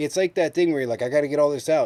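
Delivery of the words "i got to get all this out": words tumbling out in a hurried, rattled-off gabble. Mocking another speaker for talking too fast: mocking rushed fast talking. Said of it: "You notice how I don't have to fucking talk super fucking fast?".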